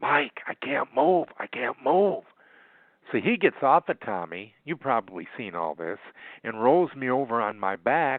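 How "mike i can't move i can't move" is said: whisper, higher pitched. Retelling lying hurt in the ring and calling to a partner: retelling a whisper. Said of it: "I'm whispering over my shoulder".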